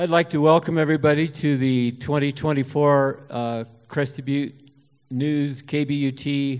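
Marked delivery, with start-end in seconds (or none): 3.3-6.6 slow, drawn-out announcer-style speech. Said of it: "I'll talk real slow".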